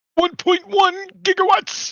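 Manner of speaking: shrill, drawn-out, high and loud delivery. Quoting a famous film line at the table: bad Christopher Lloyd impression. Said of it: "I said it wrong 'cause my voice sucked".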